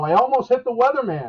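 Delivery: loud high-pitched yell. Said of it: "He yells out the window".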